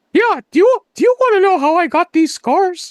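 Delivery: very high and loud, cartoonish voice. Quoting a movie line as a running gag, in a Mickey Mouse voice. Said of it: "unhinged thing I could say is Mickey Mouse".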